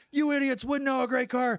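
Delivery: put-on very high, raging, furious outburst. Retelling how Pat Tillman reacted when his car was roasted: imitating Pat Tillman furious. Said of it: "And Tillman hits the roof".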